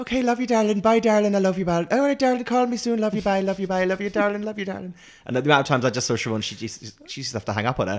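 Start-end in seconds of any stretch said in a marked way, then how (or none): 0.0-4.9 pitched-up Irish mother voice with looping repetitive phrasing. Imitating a friend's mum who is hard to get off the phone: imitating Eileen's Irish mum goodbye. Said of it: "is a classic Irish mum".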